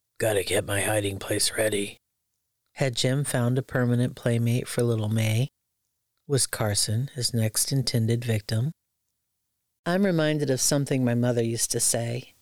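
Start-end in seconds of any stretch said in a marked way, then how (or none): 0.2-2.0 low self-absorbed muttering. Clearing out a hiding spot under the stairs, muttering. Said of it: "And he was muttering".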